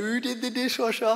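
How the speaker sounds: high, loud, yelled-out call. Retelling Mum calling out in the kitchen: imitating Mum yelling. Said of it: "yelled out".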